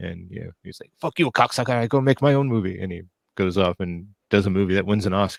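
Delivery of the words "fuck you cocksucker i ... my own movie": high-pitched, angry outburst. Telling how Guillermo reacted when the studio refused his remake, in a Guillermo impression. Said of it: "Was was that your Guillermo impression?".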